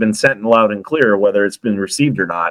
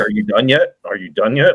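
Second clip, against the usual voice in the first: fed-up, annoyed, impatient nagging tone. Retelling how the wife complains about long recordings: imitating a pissed-off wife. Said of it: "my wife is pissed every time".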